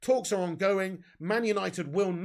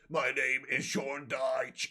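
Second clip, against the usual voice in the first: ailing, vibrating, deep, slow droning voice; 5 semitones lower than usual. Imagining how a football manager would sound with covid: Sean Dyche with covid voice. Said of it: "Sounds like Kane from W W F".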